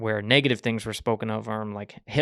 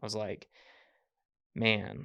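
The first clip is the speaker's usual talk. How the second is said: ordinary talk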